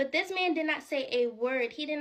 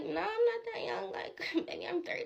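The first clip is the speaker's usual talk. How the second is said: put-on mature, grown-up tone, pitched up; 7 semitones higher, 3 dB quieter than usual. Retelling an answer to a stranger asking her age: imitating herself acting older. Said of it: "I'm trying to act like I'm older".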